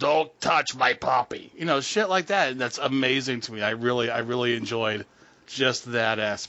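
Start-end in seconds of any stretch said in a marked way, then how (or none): 0.0-1.5 whiskey-and-cigarettes lifelong chain smoker's voice. Quoting a line from a TV movie: imitating Kim Richards' whiskey-and-cigarettes voice. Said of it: "she's already got that voice like she's been drinking whiskey and smoking".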